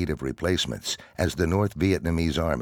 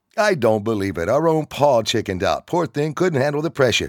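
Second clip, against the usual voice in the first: needling, mocking sarcasm, pitched up; 8 semitones higher, 6 dB louder than usual. Within the group, one member mocks another who chickened out; sarcastic. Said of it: "Dan said sarcastically".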